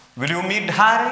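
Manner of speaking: Harry said with a rising end. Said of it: "Rising intonation".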